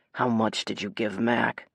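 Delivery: toneless, flat, deadpan monotone. Reading a character pressing a man about a payment: flat. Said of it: "Nate asks flatly".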